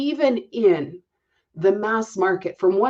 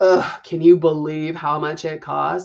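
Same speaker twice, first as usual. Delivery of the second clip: mock gloomy whining, much lower; 5 semitones lower than usual. Acting out what people hear from a Debbie Downer, mock gloomy complaining. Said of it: "You become a Debbie Downer real fast".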